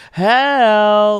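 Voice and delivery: put-on cheerful call. Joking about a dog named help, the speaker mimics someone calling it, mock-happy call of 'help'. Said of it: "And you're saying it like happy".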